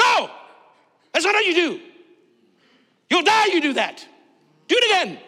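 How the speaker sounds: mock military commander yell, swooping pitch. Retelling how a trainer yelled at a soldier who made a mistake: imitating a commander yelling. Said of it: "he yells at them".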